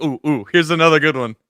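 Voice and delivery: normal talking voice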